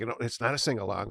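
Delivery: ordinary delivery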